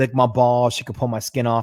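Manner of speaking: put-on Boston accent. Retelling a post-credit scene line in a Boston accent imitating Johnny Blaze. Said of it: "goes full Boston accent".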